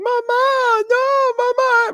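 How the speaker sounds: mock very high, sobbing little girl wail. Retelling a viral clip of a little girl: imitating a crying little girl. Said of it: "this little girl who was crying".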